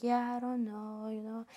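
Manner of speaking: soft, shy, insecure-sounding mumble. Describing a very shy man, the speaker imitates how he talks very low. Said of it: "He literally talks like this, talks very low".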